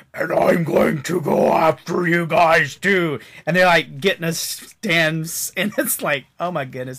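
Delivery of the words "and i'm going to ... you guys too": loud, slow evil cartoon villain voice. Describing a character coming out, the speaker quotes him in an evil cartoon voice. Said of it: "like that evil cartoon voice".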